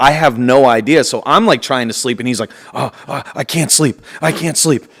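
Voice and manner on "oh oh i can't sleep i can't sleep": amped-up, restless, wired, hyped-up voice. Trying to sleep while a dude talks, imitating a guy jacked up on Adderall. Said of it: "this dude's jacked up on Adderall".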